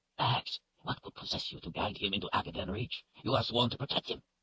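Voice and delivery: sharp, harsh, reproachful half-whisper under the breath. Narrator reads a man leaning close to Kaelin, in a harsh half-whisper. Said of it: "directing a harsh whisper".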